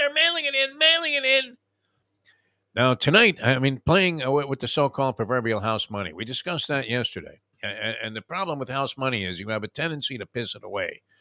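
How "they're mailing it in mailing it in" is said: very high, screaming yell. Imitating a friend watching a game on TV: imitating someone screaming at TV. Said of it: "screaming at the television set".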